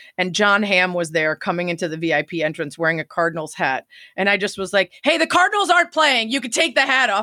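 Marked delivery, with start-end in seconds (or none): 5.1-7.3 mock hollering, raised and pitched-up yell. Retelling calling out to a man in a Cardinals hat at Wrigley, retelling a yell. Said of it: "Why are you yelling at John Hamm?".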